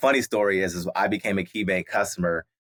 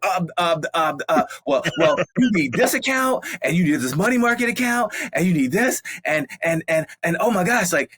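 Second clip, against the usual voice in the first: flustered, stammering ramble, stumbling over repeated words; 10 semitones higher, 3 dB louder than usual. Retelling a bank worker's answer about which accounts to open: mock-flustered stammering. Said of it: "And I had you to check and say".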